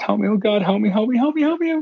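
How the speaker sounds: mock very high, rising, desperate pleading cries and screams. Retelling a lady running barefoot toward the camper; imitating a lady screaming. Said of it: "a lady just screaming".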